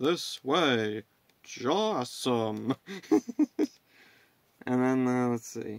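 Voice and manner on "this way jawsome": weird, stiff, oddly stilted robot-like voice. Retelling a funny bit, quoting the Sharkbot in a weird stilted voice. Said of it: "in like a weird stilted voice".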